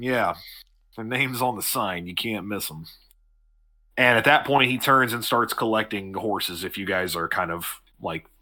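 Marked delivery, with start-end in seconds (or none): 0.0-2.8 curt, all-business, dismissive brush-off. Voicing a character who turns dismissive: dismissive, all business. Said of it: "you can tell that he's kinda gone all business".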